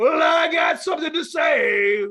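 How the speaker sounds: very loud, booming, high, slow, stretched-out yell. Retelling grabbing a steel chair in the ring: imitating own past yell. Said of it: "I just yell".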